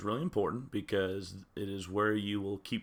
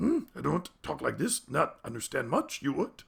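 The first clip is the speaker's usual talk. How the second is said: rasping, sing-song put-on voice; 5 semitones higher than usual. Show the listeners the voice you are working hard not to use, in your Tech Yoda voice. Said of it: "Tech Yoda voice".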